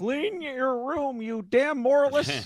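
very high-pitched, slow delivery. Retelling a favorite movie part where Kermit comes out: Kermit voice. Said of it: "Kermit comes out and he's like".

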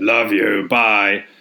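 robotic, alien, cyborg-monster machine voice. Retelling how he signs off a phone call to his wife, in Dalek voice. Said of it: "repeats it in the Dalek voice".

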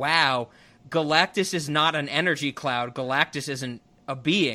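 ordinary talk

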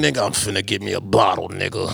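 low, gravelly, grizzled, rough-edged growl. Retelling what a friend said about buying a bottle: imitating a gravelly voice. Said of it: "With the grizzle voice and everything".

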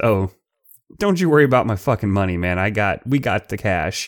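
acted calm, cool tone. Retelling a phone deal story, the speaker quotes a man's reply, acting very cool. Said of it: "And Ramon very coolly says".

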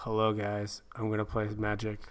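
quiet, flat, mechanical, robot-like monotone. Imitating a dull MPL player greeting viewers before a game: robotic. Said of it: "very well and robotically".

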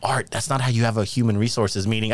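ordinary delivery

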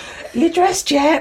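high-pitched, loud shouting yell. Recalling calling through the door at others not getting ready: re-enacting own shouting. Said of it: "And I'd be like shouting at the door".

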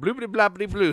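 mock French-sounding gibberish. Admitting not speaking French, imitating Joey's fake French gibberish. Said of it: "I'm like Joey".

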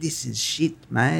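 put-on Australian accent. Retelling what a mum said about the blender: imitating mum in australian accent. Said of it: "A little bit of Australian in there".

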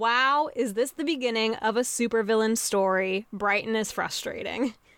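ordinary delivery

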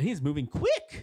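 loud, high, urgent, emphatic voice.

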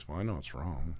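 softly spoken. Recalling how they spoke up when everyone was being asked, retelling a quiet remark. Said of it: "I kind of just quietly said".

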